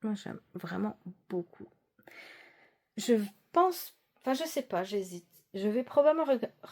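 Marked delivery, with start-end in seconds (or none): 5.5-6.7 stumbling, halting delivery with a false start. Speaking to viewers about her next project, stumbling over words. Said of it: "je bafouille aujourd'hui".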